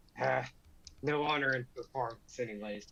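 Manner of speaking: remark said half to oneself. After the prince's performance, a player's character Ronan comments, muttering under his breath. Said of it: "Ronan kind of mutters under his breath".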